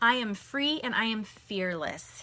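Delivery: ordinary delivery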